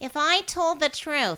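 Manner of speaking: put-on wheezy, loud, slow, drawn-out voice. Imitating how Haig spoke when confessing: imitating Haig with a little wheeze. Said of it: "this little wheeze".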